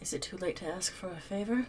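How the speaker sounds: very quiet, breath-only half-whisper under the breath. Speaking in character as a figure approaches, half-whispering under the breath. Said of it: "I'm going to whisper under my breath".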